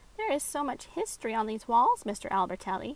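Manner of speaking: ordinary delivery, nothing marked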